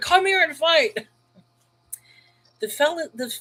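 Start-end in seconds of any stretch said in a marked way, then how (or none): 0.0-1.1 high-pitched, screaming, challenging tone. Retelling Goliath screaming at the people, imitating Goliath screaming. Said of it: "He's screaming at the people. He's like".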